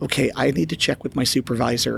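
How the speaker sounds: ordinary talk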